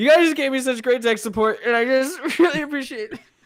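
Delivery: put-on weepy sob-talk. Suggesting how to lean into an awkward mistake, fake crying. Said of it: "just like start fake crying".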